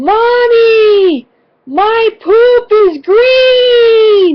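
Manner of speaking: put-on, very high, shrill child scream, mommy drawn out slowly. Retelling a daughter screaming out on a trail: imitating a child screaming. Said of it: "my daughter screams out".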